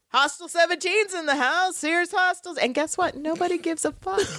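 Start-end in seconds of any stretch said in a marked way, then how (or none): 0.1-2.5 play-acted shouting, proclaiming out loud. Retelling a TV scene where Xander announces Spike: imitating Xander shouting. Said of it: "starts shouting from the rooftops".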